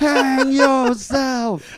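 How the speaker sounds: shrill, very high, very loud screaming. Retelling a woman who stood up and screamed at the speaker, retelling a woman screaming. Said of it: "she's like screaming at me like this".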